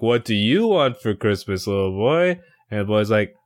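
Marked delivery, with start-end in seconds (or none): 0.0-2.4 hammed-up, showy, performative put-on voice. Retelling Tim Tom playing Santa with kids on his lap: imitating Tim Tom, performatively. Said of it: "very performatively".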